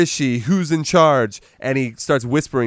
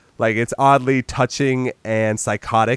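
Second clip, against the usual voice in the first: ordinary talk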